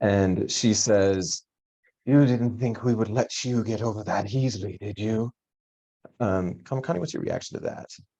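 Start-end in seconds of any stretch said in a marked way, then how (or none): 2.0-5.3 hiss layered like many overlapping voices. She appears between the party and Kamakani and speaks: hissing, many overlapping voices. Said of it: "she hisses and her voice overlaps".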